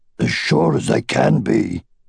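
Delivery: ordinary delivery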